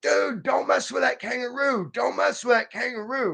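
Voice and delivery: mild, high-pitched mock yell. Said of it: "yelling at him".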